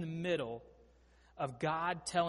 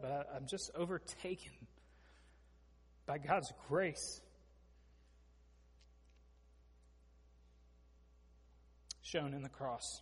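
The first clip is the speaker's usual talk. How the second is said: soft, breathy, choked-up voice; 7 dB quieter than usual. Speaker preaching on a Bible passage, overtaken by emotion mid-message: choked up. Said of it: "I'm getting choked up".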